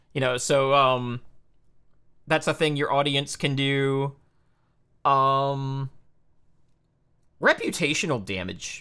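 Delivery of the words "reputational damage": voice cracking and breaking mid-phrase. Explaining channel rules, the speaker's voice cracks mid-phrase. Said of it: "my voice cracked".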